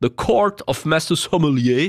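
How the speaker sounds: slow, cheap fake English accent.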